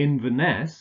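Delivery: Inverness with the stress on the final syllable -ness. Listing city names with their stress patterns: stress on last syllable of Inverness. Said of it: "stress on the last syllable".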